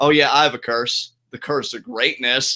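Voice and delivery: sarcastic, mocking. Trying out a different reading of the line, sarcastic, mocking. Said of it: "Maybe it's more sarcastic, like".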